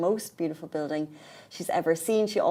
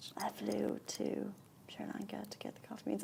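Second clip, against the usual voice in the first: mock calm slow monotone voiceover, higher and quieter; 4 semitones higher, 13 dB quieter than usual. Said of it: "I think she's soothing".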